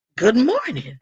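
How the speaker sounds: pointed tone, voice flexed on purpose. Retelling a greeting to a brother who walked past: retelling a greeting with voice flexed. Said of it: "flexing in my voice".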